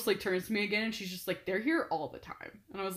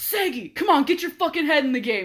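high, loud sports-fan yelling; 6 semitones higher, 7 dB louder than usual. Retelling yelling at a player during the game, retelling own yelling. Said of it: "yelling at Seguin".

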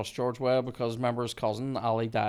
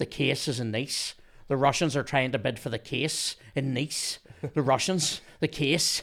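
clumsy, bad, put-on Irish brogue. Quoting film dialogue you find awful to a co-host, in a bad Irish accent. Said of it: "this is the dialogue in a bad Irish accent".

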